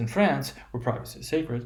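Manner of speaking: pause after France with a dip in pitch. Long noun phrase example with a pause after France. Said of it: "we have a sort of a pause in the noun phrase".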